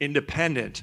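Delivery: leaning heavily on the word independent. Introducing the administrator of the UFC's anti-doping program, stress the word independent. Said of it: "and I stress that word".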